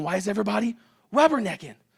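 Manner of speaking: high, loud, furious put-on screaming. Driver retells yelling at rubbernecking traffic, retelling own screaming. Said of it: "So I start screaming".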